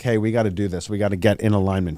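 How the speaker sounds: ordinary talk, nothing marked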